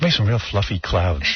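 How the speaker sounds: put-on gentle whisper. Imitating a whispering, gentle painter on his show: imitating the painter's gentle whisper. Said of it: "Gentle artist".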